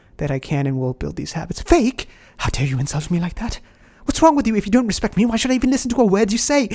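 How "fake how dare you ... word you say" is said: fake British accent, much higher pitch. In an acted exchange, answering the other speaker: fake british accent. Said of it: "in your fake British accent".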